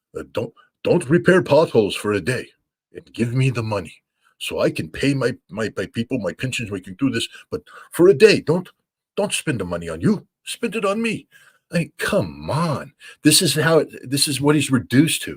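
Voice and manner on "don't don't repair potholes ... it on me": stupid, ridiculous put-on Ukrainian accent. Mimicking a man who asks people to give him money, in a ridiculous put-on accent. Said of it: "it's in this ridiculous, stupid accent".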